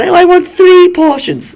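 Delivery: very high, loud, drawn-out voice. Retelling a Star Wars scene with Rey asking for food: Rey impression. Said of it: "That's a great Rey impression".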